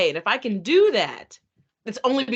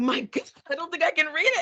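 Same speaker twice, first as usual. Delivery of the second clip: high, alarmed, startled yelled outburst; 7 semitones higher than usual. Speaker recalling reading their own piece during editing, retelling a yell. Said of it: "I literally yelled out loud".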